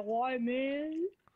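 goofy, put-on bro-style dude voice. Showing a friend how to ask why in a prank: deep voice. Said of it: "Like a deep voice".

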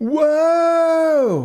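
very high, stretched-out exclamation "whoa". A character suddenly grabbed up off the kitchen counter, exclaiming. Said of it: "he exclaimed".

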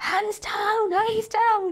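very high, slow, drawn-out scream. Retelling a father screaming at a child rider: imitating a father screaming. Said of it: "he was just screaming".

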